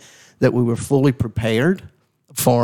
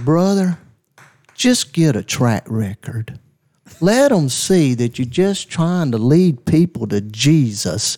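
put-on southern drawl. Retelling a night call from pastor John McKnight, imitating John McKnight's southern drawl. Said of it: "he had this very southern drawl".

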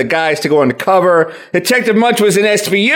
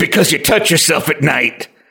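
mock angry, very mad delivery. Retelling a cartoon curator's line to show it was said: imitating an angry line. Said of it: "he did say it angrily".

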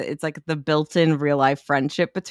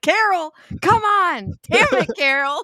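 mock very high, very slow, drawn-out hollering; 13 semitones higher than usual. Retelling a tennis scene from a movie: imitating Kristen Wiig yelling. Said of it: "Kristen Wiig's just yelling at the woman".

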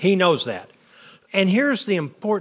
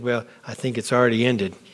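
put-on muttering under breath, lower; 5 semitones lower than usual. Retelling a reply to a woman: imitating someone muttering under his breath. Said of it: "Under his breath".

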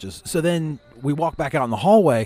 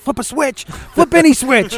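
urgent, very high, drawn-out yell; 12 semitones higher, 8 dB louder than usual. Retelling spotting something and yelling at the guys, retelling a yell. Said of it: "I'm yelling at the guys".

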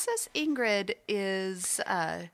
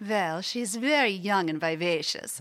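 louder, fake Nordic-sounding accent; 4 dB louder than usual. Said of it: "we gotta hear just a little bit of Princess Ingrid".

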